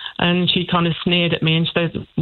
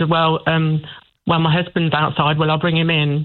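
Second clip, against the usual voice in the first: ordinary talk, nothing marked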